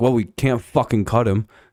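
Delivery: ordinary delivery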